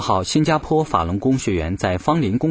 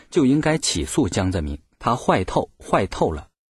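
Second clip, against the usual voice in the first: ordinary talk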